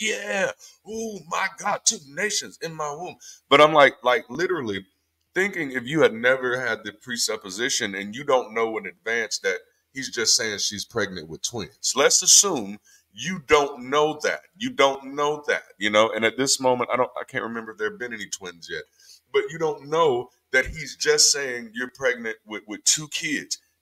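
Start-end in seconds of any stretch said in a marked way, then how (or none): 0.0-3.1 high, awed, reverent-sounding voice. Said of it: "everybody would have been like".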